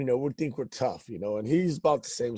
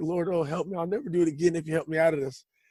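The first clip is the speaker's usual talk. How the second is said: imitated panicked, frightened cry, higher; 4 semitones higher than usual. Retelling running from a cop while scared and crying: imitating a panicked cry to God. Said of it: "the natural cry out that a man does".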